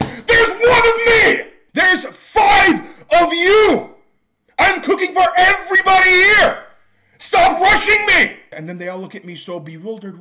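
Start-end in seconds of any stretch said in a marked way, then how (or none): 0.0-8.4 put-on very high, very loud, furious angry shouting. Retelling cooking for five people who rush her, imitating own angry yelling. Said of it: "What are you getting so angry for?".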